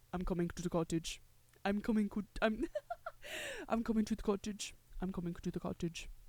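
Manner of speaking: put-on soft, swooping Russian accent. Retelling a story, voicing Ilya calling Shane, in Ilya's Russian accent. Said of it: "I tried to do it in Russian".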